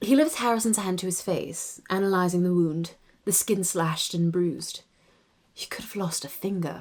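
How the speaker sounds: RP British English accent, read aloud. Reading aloud from one's own written work: RP accent. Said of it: "reading my work with this, this accent".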